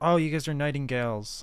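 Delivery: deflated, disappointed tone. Learning which faction the other speaker belongs to, disappointed. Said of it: "Why do you sound so disappointed?".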